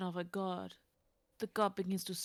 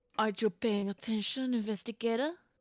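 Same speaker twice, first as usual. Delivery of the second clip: put-on French accent, louder; 3 semitones higher, 7 dB louder than usual. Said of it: "half an hour of French accent".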